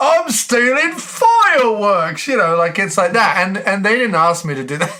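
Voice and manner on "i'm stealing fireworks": put-on Cockney voice, very high-pitched and swooping. Recalling own line from the opening of a film role: put-on Cockney accent. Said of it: "talking like a Cockney guy".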